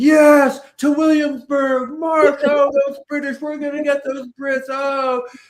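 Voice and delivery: play-acted, very high-pitched, excited cheering yell. Retelling what high schoolers yell during a class vignette: imitating students yelling excitedly. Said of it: "when high schoolers are yelling".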